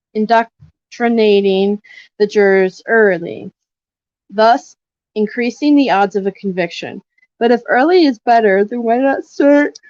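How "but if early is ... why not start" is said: talking through a yawn, higher. Discussing prosecutors and jurors, the speaker talks while yawning. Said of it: "sorry, I keep yawning".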